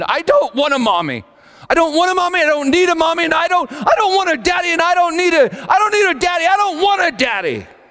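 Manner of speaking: put-on very high, shrieking little girl tantrum scream. Retelling a five-year-old daughter's meltdown, imitating a screaming child. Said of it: "she started screaming".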